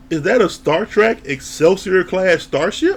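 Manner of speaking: ordinary talk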